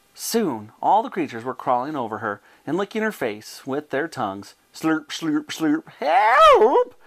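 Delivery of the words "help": shrill, high, loud, long-held cry at full volume. Reading Bessie's line as the creatures crawl over her, crying out for help. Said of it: "She cried out".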